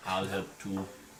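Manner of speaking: put-on German accent, very low, deep and hushed. Game master voicing a cloaked man offering to help the players, German accent like Schwarzenegger. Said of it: "German accent like Schwarzenegger".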